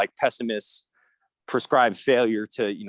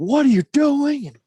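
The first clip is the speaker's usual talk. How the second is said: put-on screaming, higher and louder; 7 dB louder than usual. Imitating a parent at their kid's missed free throw: imitating a parent screaming. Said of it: "screaming at 'em".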